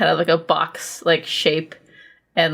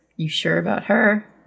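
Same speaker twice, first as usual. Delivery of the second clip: secretive, confidential, private manner; 4 semitones higher than usual. In a role-play, a player's character leans close to another character to ask, hushed. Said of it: "in hushed voice".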